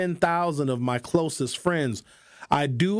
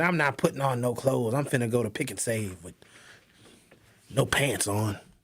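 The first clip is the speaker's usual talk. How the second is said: acted fed-up, mad, defiant outburst; 4 semitones lower than usual. Acting out Linda one day, imitating Linda getting mad. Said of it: "I can see her just getting mad one day".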